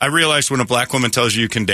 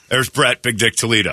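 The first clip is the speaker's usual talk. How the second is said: name said run together with no pause before it. Introducing people each morning, no pause in Brett Big Dick Toledo. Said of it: "I don't comma that. I don't put a pause on that".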